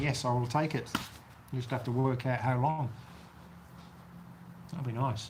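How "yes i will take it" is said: plain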